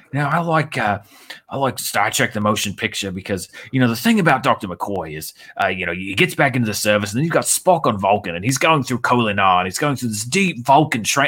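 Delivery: put-on mimicked Australian accent. Retelling what a man from australia said, imitating his aussie accent. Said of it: "so he's got that Aussie accent".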